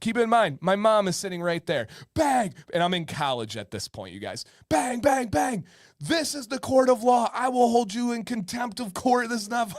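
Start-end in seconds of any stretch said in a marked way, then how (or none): 6.0-9.8 irate, angry judge voice with raised pitch. Retelling a judge scolding him in court: imitating an angry judge. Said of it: "This judge gets pissed".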